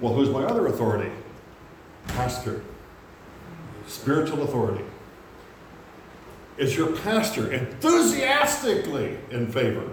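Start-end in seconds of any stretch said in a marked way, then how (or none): 7.5-9.9 enthusiastically stressed, drawn out, high and slow. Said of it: "I put the emphasis on that word enthusiastically".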